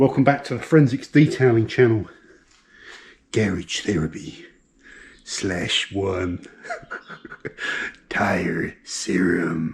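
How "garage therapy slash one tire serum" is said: very slow, hushed cinematic movie-trailer narrator voice. Welcoming viewers back to a detailing channel video, in cinematic trailer voice. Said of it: "I'm going into my cinematic trailer voice".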